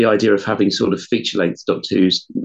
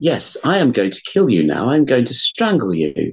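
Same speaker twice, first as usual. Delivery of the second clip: put-on calm, sing-song robotic voice; 2 semitones higher than usual. Describing how a robotic bank manager sounded: imitating a very calm robot. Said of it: "it's sort of this very calm".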